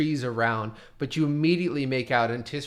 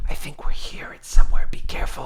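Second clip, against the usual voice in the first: strong, carrying, loud, breathy stage whisper; 10 dB louder than usual. Voicing Sunny warning the group after they heal: whispering. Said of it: "he whispers to you all and says".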